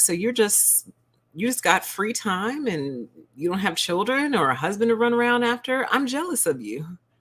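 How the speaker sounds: dead-serious, plainspoken, matter-of-fact, without chuckling. Retelling a coworker's remark over Zoom: imitating a matter-of-fact tone. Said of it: "she said it very matter-of-factly".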